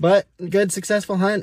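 short of breath, winded, out-of-breath talking. Just back from a quick, successful hunt, the speaker sums it up, out of breath. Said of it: "I'm out of breath".

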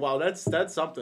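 usual speaking voice

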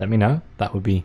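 ordinary delivery, nothing marked

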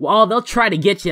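normal talking voice

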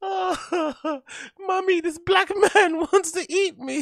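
put-on very high, frightened crying baby voice. Telling a story, acting out the baby a man screams at: imitating a crying scared baby. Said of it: "So the baby's crying".

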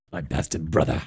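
low, soft villain character voice.

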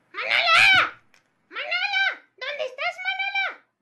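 high puppet voice, calling out.

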